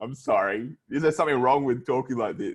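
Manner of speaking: fake, put-on mouth-full muffled talking. Defending a put-on way of talking as normal: fake toothbrush-in-mouth voice. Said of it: "This is how I talk when I have a toothbrush in my mouth".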